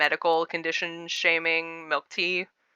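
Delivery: ordinary talk, nothing marked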